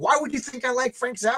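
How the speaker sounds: angry, offended, high-pitched. Retell how he reacted to being asked if he likes [name], imitating someone all mad. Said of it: "Like he got all mad".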